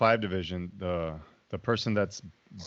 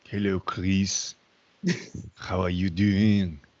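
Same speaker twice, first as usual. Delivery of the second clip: put-on gentlemanly French accent; 4 dB louder than usual. Describing a man whose french accent sounds gentlemanly, the speaker imitates him: french accent.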